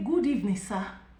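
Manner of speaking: plain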